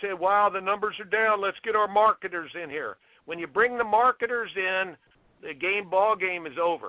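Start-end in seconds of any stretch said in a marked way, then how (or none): none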